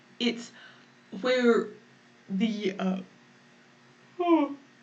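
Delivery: spoken while yawning, mid-yawn. Explaining a concept to listeners, yawning. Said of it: "I'm talking about yawning".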